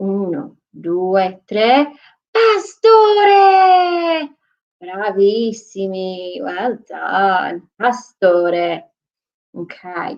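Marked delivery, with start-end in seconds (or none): 2.3-4.3 very high, stretched-out, loud drawn-out shout. Leading children again after asking for more: saying pastore even louder. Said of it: "Can you do it a bit louder?".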